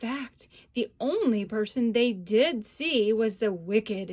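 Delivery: ordinary delivery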